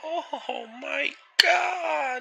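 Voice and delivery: very high, very loud shout. Quoting a favourite video game voice line: Luigi voice. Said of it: "really good Luigi one where he goes like".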